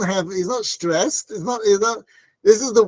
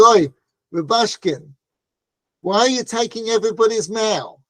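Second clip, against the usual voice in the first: put-on very thick, laid-on Brooklyn Italian accent. Retelling what a man said on coming up to someone, thick Italian Brooklyn accent. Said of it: "in a very thick Italian Brooklyn accent".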